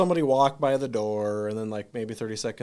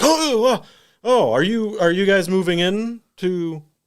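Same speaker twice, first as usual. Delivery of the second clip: thick put-on German accent, very high and slow; 9 semitones higher, 4 dB louder than usual. Predicting how a man will greet them, the speaker voices him in a heavy German accent. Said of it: "with the heavy German accent, of course".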